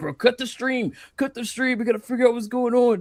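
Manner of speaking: frantic, very high, loud, acted freaking-out panic. Retelling a friend panicking when the boat motor stopped: imitating Atreus freaking out. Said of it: "he's freaking out".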